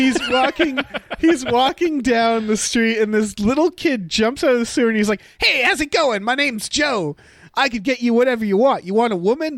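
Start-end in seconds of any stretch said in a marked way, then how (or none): 5.4-9.6 put-on child speaking in a thirty-year-old man's voice. Retelling a movie scene where a sewer kid offers help: Joe voice. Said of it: "who has the voice of a thirty-year-old man".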